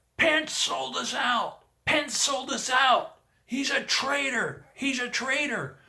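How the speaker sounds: shrill, very high, slow, drawn-out yell. Retelling what a man in the crowd shouted: imitating a man yelling. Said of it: "this guy over to my right starts yelling".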